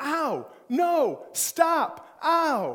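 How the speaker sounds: very high, very slow, drawn-out yelping shouts. Retelling how the sister shouted from her room: imitating sister shouting. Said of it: "my sister in her room shouting".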